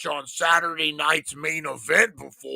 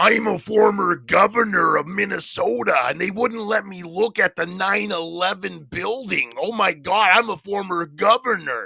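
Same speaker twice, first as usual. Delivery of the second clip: put-on elderly man voice; 3 semitones higher, 3 dB louder than usual. Showing an impersonation of someone doing a Jesse Ventura impression: Jesse Ventura impression. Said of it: "I'm gonna do my impersonation now".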